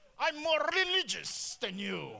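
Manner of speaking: fake, pompous, loud British accent through near-shut mouth. Mocking people who act more religious, speaking in a put-on closed-mouth British accent. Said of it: "speak with this accent that causes you to close your mouth like a British".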